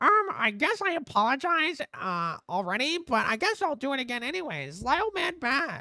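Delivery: very high, squawking, clucking hen voice. Reading an apology statement aloud mockingly: mocking hen-like reading voice. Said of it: "I need to fucking read it like a hen".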